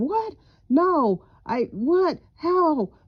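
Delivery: stunned, high, very slow, drawn-out disbelieving scream. Acting out getting a shocking phone call: screaming in shock. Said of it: "because you're screaming".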